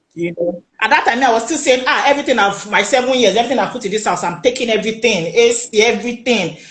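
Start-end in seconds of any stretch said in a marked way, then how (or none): none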